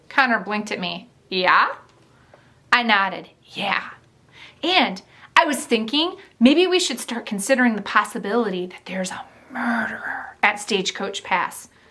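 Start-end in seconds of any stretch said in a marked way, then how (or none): 9.6-10.4 hushed whisper, much quieter. First-person narrator speaking to Connor, whispering the word. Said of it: "I whispered the word murderer".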